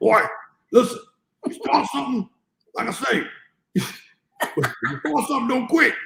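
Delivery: gruff high dad voice. Retelling what his dad told him as a boy, imitating dad's gruff voice. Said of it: "he has like a real gruffy voice".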